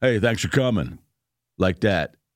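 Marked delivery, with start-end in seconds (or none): 0.0-1.0 mock snarky, grudging, snide and smug tone. Retelling a stranger's remark after getting his money back: imitating a snide thank-you. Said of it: "it was a prick way of saying it".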